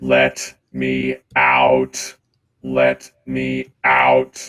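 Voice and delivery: very loud, flat, mechanical robot voice. A narrator voicing a robot the listeners have just come upon, in a robot voice. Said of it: "speaking in a frickin' robot voice".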